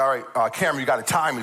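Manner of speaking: usual speaking voice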